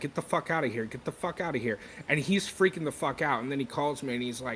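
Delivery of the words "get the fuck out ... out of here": usual speaking voice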